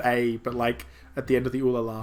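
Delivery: plain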